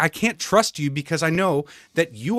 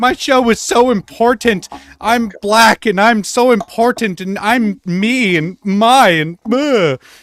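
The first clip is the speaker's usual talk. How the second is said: put-on high, loud, drawn-out, self-pitying tearful blubbering; 5 semitones higher, 7 dB louder than usual. Imitating Joy Reid crying about herself in a video: mock crying Joy Reid impression. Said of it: "video crying about herself".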